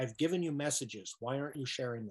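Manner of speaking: ordinary delivery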